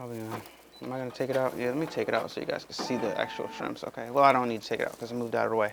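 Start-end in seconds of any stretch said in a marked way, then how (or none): 3.8-5.7 rushed, rapid-fire, fast talk. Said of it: "I'm talking kinda fast".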